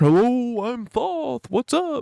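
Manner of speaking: goofy high bird voice. Imagining the Birdman Thoth flying down out of the sky, in a goofy Thoth voice. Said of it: "he's got kind of like a goofy voice".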